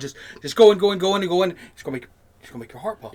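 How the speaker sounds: rapid, forceful, loud rush of words. Showing how a voice can make a listener's heart pump: talking fast and hard. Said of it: "I'll talk real fast and hard like this".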